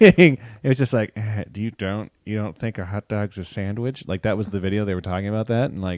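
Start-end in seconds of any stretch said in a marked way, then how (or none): 1.2-4.1 mock patronizing, superior, condescending delivery. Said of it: "more condescending".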